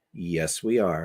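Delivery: deadpan, straight-faced, very low and soft. Retelling answering people who asked if they were important, retelling a deadpan answer. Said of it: "with a straight face and said".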